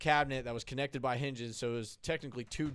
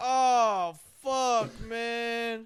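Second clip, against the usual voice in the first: very high, loud, pained groan with drawn-out oh; 11 semitones higher, 8 dB louder than usual. Telling how a man fell over, the speaker is imitating his moaning in pain. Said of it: "He's like just moaning in pain".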